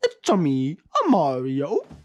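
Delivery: pitch swung around, badly. Filming an outro, slipping into a bad Mario impression. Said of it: "this Mario impression does not exist".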